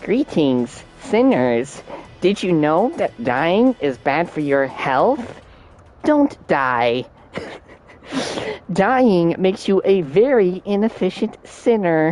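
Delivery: flat synthesized text-to-speech announcer voice. Describing the intercom announcements heard outside the cell, Percy Propa text-to-speech voice. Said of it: "this like text to speech voice".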